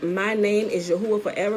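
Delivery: ordinary talk, nothing marked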